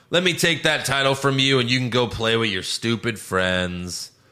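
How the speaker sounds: plain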